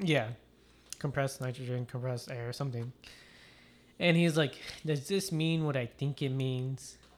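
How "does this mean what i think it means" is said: creepy doll character voice, slower pace. Retelling a scene where a man finds a can of compressed air; Chucky voice. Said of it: "That's a good Chucky voice".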